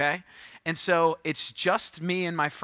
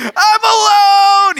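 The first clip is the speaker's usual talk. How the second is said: shrill, very high, very loud wailing scream; 17 dB louder than usual. Recalling being left alone as a seven-year-old on the blacktop: retelling his childhood screaming. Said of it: "just started screaming".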